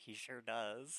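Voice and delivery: whispering under breath. Voicing a character who murmurs a reply: whispering under her breath. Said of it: "she whispers under her breath".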